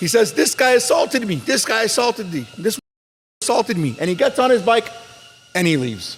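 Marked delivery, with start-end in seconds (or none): 0.3-4.0 mock high yell, repeated over and over. Retelling how a guy grabbed his bike and accused the teller: imitating someone yelling. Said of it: "He starts yelling".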